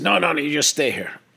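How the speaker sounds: Irish brogue. Retelling a teacher refusing a student's bathroom request: Irish brogue as McStay. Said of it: "he had, like, an Irish brogue".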